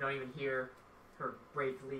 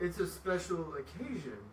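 giant character voice, pitched up; 5 semitones higher than usual. Voicing the flame giant in a role-playing scene: flame giant voice. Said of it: "the flame giant turns. ... I'm [name]'s first wife".

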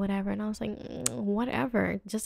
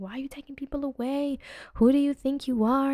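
put-on drunken crying and yelling, tearful, higher and louder; 4 semitones higher, 4 dB louder than usual. Retelling confronting police at a birthday: imitating drunk crying and yelling. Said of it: "in my emotions and crying and screaming and yelling".

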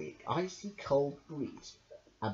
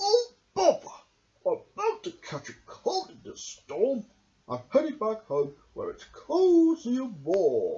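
high, swooping badger character voice; 6 semitones higher than usual. Reading a story aloud, the reader voices the badger in a badger character voice. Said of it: "being Read by Me by only using the Badger's Voices".

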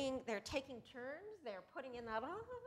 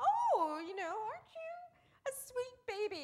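put-on cooing mother voice, very high and slow; 12 semitones higher, 7 dB louder than usual. Imitating a three-year-old talking to a two-year-old, in a put-on mother voice. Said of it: "putting on a mother voice".

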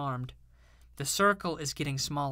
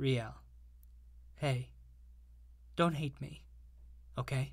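hushed, soft, gentle whisper; 7 dB quieter than usual. Iggy, having just berated riel, turns to her in a soft whisper. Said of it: "Iggy whispered softly to her".

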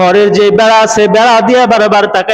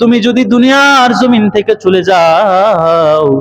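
tearful, crying voice. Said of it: "আর কান্না করে বলে".

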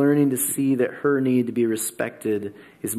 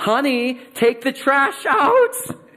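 put-on, very high, bitter nagging voice; 5 dB louder than usual. Retelling his wife's request to him, imitating her bitter tone. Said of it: "she said it with this bitterness to her voice".

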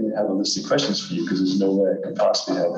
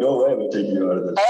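usual speaking voice

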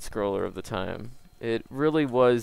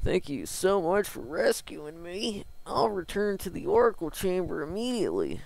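high-pitched put-on Texas accent; 8 semitones higher than usual. Reading a rescued character's dialogue aloud from a game, in a texas accent. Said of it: "I kind of had a Texas accent there".

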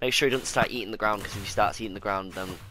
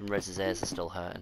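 ordinary delivery

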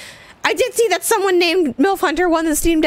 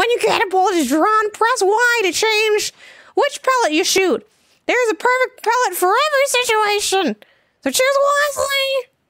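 talking in a toad character voice; 4 semitones higher than usual. Reading a game's instructions aloud, the speaker voices the toad character. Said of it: "doing this toad voice".

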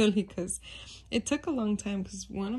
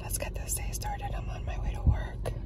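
quiet whispered voice. Recording a morning greeting on the way to work, whispering. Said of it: "I don't know why I'm whispering".

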